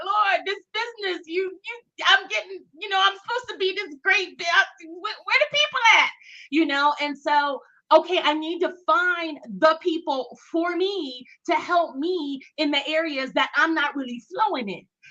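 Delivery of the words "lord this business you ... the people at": mock tearful, overwhelmed crying, words breaking off. Retelling a cry to the Lord about the business: imitating own past crying. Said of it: "and me crying like".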